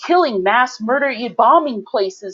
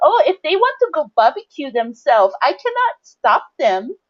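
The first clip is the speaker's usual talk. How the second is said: put-on Vietnamese accent; 4 semitones higher than usual. An embarrassed Vietnamese speaker retells what a woman said on the news, in a stupid Vietnamese accent. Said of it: "with her stupid Vietnamese accent and said".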